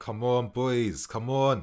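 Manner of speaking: nervous, tense, anxious, on edge. Watching a match live, nervous and tense. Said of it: "the nervous I'm feeling for this game".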